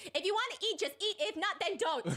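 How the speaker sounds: restrained, mild, high-pitched yelling scream. Retelling how the chill husband screamed at his wife: imitating a husband screaming. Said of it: "the chill husband screams".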